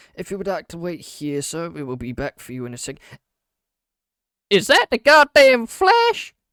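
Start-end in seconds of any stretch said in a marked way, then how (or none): 4.5-6.3 put-on very loud, very high Southern accent outburst. Introducing an interview with John Valorant, the speaker breaks off: sudden southern accent. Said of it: "Why did you become southern?".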